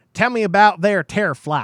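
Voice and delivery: loud, hokey, laid-on put-on country accent. Reading aloud a comment someone sent in, in a country voice. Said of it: "In a country voice".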